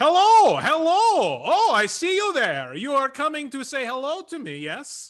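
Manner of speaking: fake Polish accent, very high and swooping. Voicing a radio tower speaker greeting the players: put-on polish accent. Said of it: "the accent I am now going to be using".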